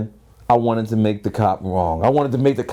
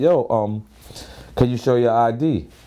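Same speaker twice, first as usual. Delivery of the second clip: ordinary talk, nothing marked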